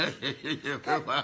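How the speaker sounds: slow words spoken while laughing.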